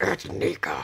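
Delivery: low demonic voice from the depths. Correcting a man who says her name wrong, speaker answers in demon voice. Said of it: "And I sound like a demon".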